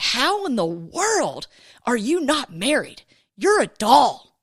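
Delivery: stunned, astonished, disbelieving, incredulous delivery. Retelling what a man at a gas station said: imitating an astonished man. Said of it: "he proceeds to act astonished".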